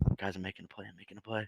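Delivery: very soft, quiet half-whisper. Imitating a teammate calling out his plays: half-whispering like Tom. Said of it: "he'll start whispering it right here".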